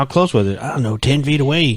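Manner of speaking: fake rural country accent, put on. Joking as a cryptid eyewitness describing a sighting: put-on country accent. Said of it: "I don't know why I'm talking country".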